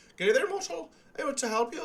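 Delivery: put-on heavy, full-on Irish accent, very high and loud. Imitating a game character's line: full-on irish accent. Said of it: "full-on, like, Irish accent".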